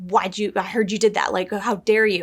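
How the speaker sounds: mock accusatory, accusing tone. Retelling how the lady in charge questioned them: imitating an accusatory tone. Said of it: "very accusatory".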